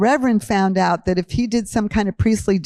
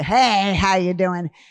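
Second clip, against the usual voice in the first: real gruff, rough, slow manner. Recalling how a man named James would greet people: imitating James, gruff. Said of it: "He was this real gruff guy".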